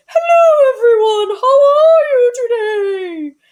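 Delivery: very high, loud, hooty voice, floating up slowly. Showing a vocal warm up in a heady airy space: Julia Child voice. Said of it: "imitating Julia Child".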